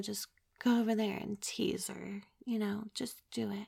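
soft, sensual, hushed coaxing, gentle. Showing how a call for the next caller sounds: soft and sensual. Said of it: "I'm being all soft and sensual".

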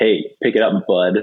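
put-on condescending voice. Showing how a polite word comes off: mock condescending tone. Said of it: "it's really condescending".

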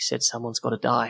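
rushed, quick, quiet mumbled mutter. Game master voicing a character who drops a body to the floor, muttering quickly to himself. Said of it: "he kind of mutters quickly to himself".

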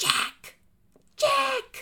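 very high whisper-yell with a whine. Imitating how a woman calls Jack across the room: imitating a whisper-yell. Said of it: "whisper yells".

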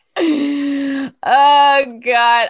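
high, loud words breaking through laughter. Laughing at a funny voice recording: laughing while talking.

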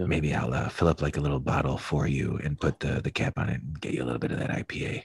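hushed, low talk. Talking so that another person can't hear, talking low. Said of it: "I'm talking so low".

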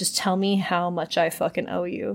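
ordinary talk, nothing marked

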